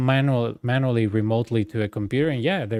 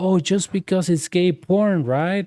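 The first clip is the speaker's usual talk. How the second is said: high, outraged, indignant shrieking scream; 7 semitones higher than usual. Retelling a dispute at work, imitating the guy screaming. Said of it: "the guy was like screaming like".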